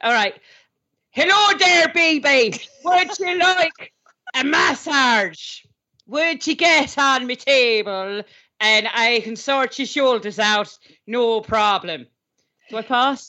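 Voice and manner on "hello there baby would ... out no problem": role-played, put-on Irish accent. Co-host auditioning in a role-play as a male irish masseuse, put-on irish masseuse accent. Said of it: "auditioning as a male Irish masseuse".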